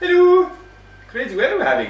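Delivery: loud, belted, swooping, sing-song Swedish accent. Greeting someone as the guy from Frozen, in a Swedish accent. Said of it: "Do the first one in a Swedish accent".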